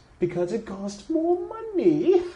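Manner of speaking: shrill, very high, very loud blaring character voice.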